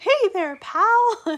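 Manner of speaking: squeaked out, high-pitched and loud. Quoting how someone always talks in a cartoon voice: Mickey Mouse voice. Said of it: "always talking like in his voice".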